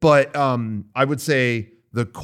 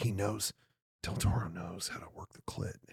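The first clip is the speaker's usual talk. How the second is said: put-on whisper, much quieter, lower; 6 semitones lower, 18 dB quieter than usual. Retelling reading on a plane, whispering to himself. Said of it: "I'm like whispering to myself".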